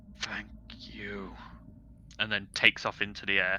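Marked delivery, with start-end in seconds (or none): 0.2-1.3 hushed, very soft dragon voice. Voicing a dragon thanking a player before flying off: voicing a dragon. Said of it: "turns to you and goes".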